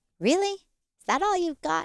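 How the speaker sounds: put-on, very high, light, playful joking tease. Retelling speaking to pain during meditation, retelling a light, joking taunt. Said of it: "taunting it very lightly and jokingly".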